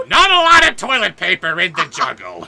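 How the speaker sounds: shrill, very loud jungle-man yell with big pitch swoops. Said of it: "Gilbert Gottfried as Tarzan".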